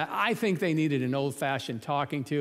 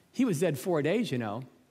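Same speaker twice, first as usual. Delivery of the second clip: usual speaking voice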